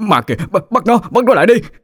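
panicky, alarmed. A husband points at a head rolling in the yard, crying out in a panicked voice. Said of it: "nói với giọng hoảng loạn".

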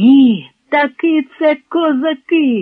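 very slow, stretched, drawn-out shout. A lad watching approaching riders jumps to his feet, shouting. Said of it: "закричав Яник".

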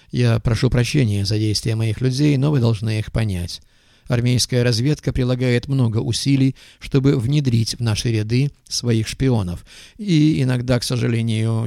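ordinary delivery, nothing marked

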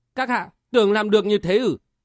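ordinary talk

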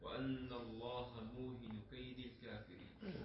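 ordinary delivery

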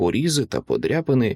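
ordinary delivery

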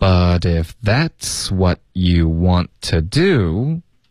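slow, linked full-sentence reading. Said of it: "我们从头再来一次".

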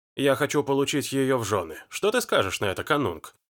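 ordinary delivery

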